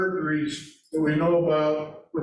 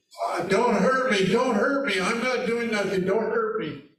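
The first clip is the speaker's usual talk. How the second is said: high, toned-down, female-like mild scream; 4 semitones higher than usual. Retelling a suspect's words when confronted by police: imitating high female-like screaming. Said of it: "starts in a high, McGowan said, female-like voice, started screaming".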